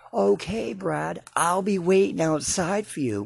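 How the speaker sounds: shrill, very high-pitched screaming. Retelling how Michelle screamed down the store aisle; imitating Michelle screaming. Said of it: "she screams out".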